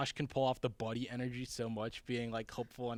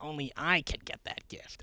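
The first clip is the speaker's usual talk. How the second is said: put-on small, childish little kid voice; 3 semitones higher than usual. Recalling the other speaker's sketch line, imitating a little kid voice. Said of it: "like, little kid voice".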